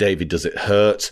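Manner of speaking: plain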